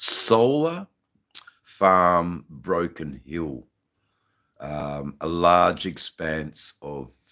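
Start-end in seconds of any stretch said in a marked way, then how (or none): 0.0-3.7 slow, careful repeat, "Farm" drawn out. Speaker repeating a place name for a listener, a bit slower. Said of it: "I'll say that again a bit slower".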